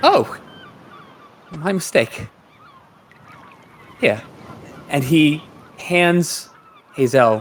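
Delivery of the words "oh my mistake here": nervous, high-pitched, jumpy voice, backing down anxiously. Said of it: "now he looks very nervous".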